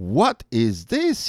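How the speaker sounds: wary, probing, suspicious tone. An officer checking a man's luggage finds a portrait, asking suspiciously. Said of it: "he asked suspiciously".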